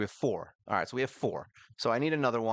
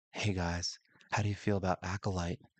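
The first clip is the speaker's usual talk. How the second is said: sunk-down, low-register talking voice; 3 semitones lower than usual. Speaker mimics how they have been talking to viewers, imitating own low voice. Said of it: "Why am I talking so low?".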